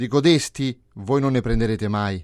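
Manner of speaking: loud, strutting, swaggering, showing-off boastful tone. Entering the hall, the coward speaks to everyone, strutting and boasting. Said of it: "si pavoneggiava dicendo ad ognuno".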